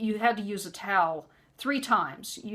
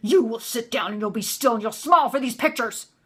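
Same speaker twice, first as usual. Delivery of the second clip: put-on deep guttural yelling, louder; 3 dB louder than usual. Retelling how the narc yelled at the speaker's son: imitating a low guttural yell. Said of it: "that's how he yelled".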